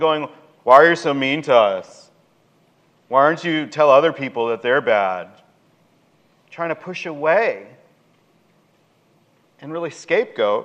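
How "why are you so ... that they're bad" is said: ordinary talk, nothing marked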